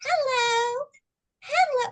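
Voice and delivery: very high, strange, weird put-on lady's voice. Complaining about people who play music and call out, in a weird woman's nationality voice. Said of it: "in this weird like woman's nationality voice".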